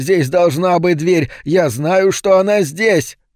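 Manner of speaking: frantic, high, desperate wailing cry. Falco, finding stone where the door was, screams in despair. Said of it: "завопил Фалько".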